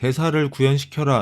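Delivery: plain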